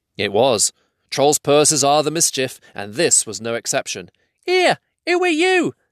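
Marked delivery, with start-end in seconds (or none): 4.5-5.7 very high, tiny, squeaky voice. A troll's purse speaks as it is lifted from a pocket; squeaky voice. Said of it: "it squeaked".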